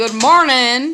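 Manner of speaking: slow, loud, drawled Southern accent.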